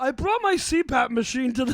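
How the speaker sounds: fat guy character voice. Doing a bit for the other speaker, in a put-on fat guy voice. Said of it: "Your fat guy voice".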